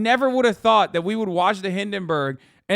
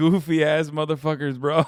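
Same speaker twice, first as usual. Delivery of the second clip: ordinary delivery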